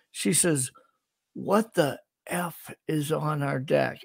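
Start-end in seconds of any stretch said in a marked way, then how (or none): 1.3-3.9 put-on loud, forceful whisper. A man retells his wife's words at the open door, in a loud whisper. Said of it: "she's like whispering as loud as she could".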